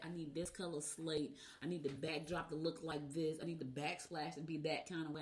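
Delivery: ordinary talk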